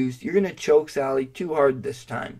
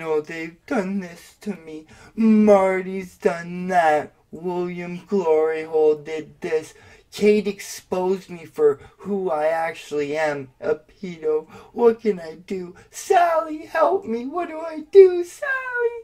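put-on sobbing, pleading whine, high and swooping; 5 semitones higher than usual. Mocking someone who cried online, imitating Cyrax crying. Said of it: "you're the one who's cried on the internet plenty of times, saying".

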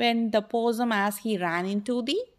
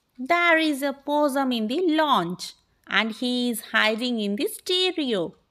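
ordinary delivery, nothing marked

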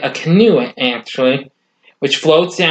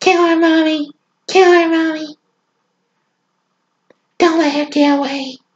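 put-on squeaky, very high, childish little kid voice; 13 semitones higher than usual. Retelling a story in which the killer speaks in a little kid voice. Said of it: "speaking in a little kiddish looking, kid sounding voice".

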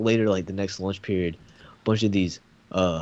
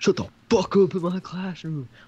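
sudden, shrill, very high put-on scream; 11 semitones higher than usual. Retelling what he yelled at a loud group in his classroom, imitating his scream. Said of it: "screamed it".

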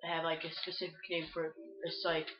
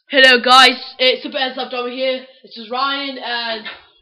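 very loud, high, put-on British accent; 7 semitones higher, 22 dB louder than usual. Video host greeting viewers at the start, fake British accent. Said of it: "I'm talking like a British person".

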